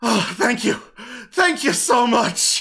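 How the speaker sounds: high, breathless, gasping for air, grateful tone. A wounded commoner, just healed back on their feet, thanks the healer: gasping for air. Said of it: "closes up the staunching wounds as they gasp for air".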